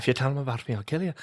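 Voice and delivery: put-on soft, murmured Irish accent. Voicing the Pocket Priest in an improvised bit, with an Irish accent. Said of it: "Why is he Irish?".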